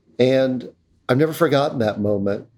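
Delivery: ordinary talk, nothing marked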